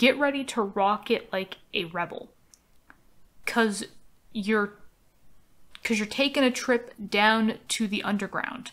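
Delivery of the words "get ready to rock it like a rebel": ordinary delivery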